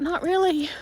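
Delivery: high, loud, wry self-correcting tone. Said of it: "I'm like".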